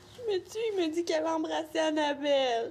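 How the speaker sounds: tearful, crying voice, speaking through tears. Answering someone who asks why they're crying, crying. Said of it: "Tu pleures pour ça?".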